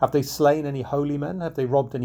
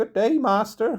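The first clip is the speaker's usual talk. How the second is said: shrill, high, thin piping little voice; 8 semitones higher than usual. Narrator reads an old stranger greeting the outlaw in passing, in a high, piping voice. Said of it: "in a high, piping voice".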